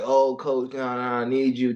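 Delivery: put-on slow, drawn-out pleading. Retelling how the other juniors begged the coach: imitating pleading. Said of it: "they were pleading".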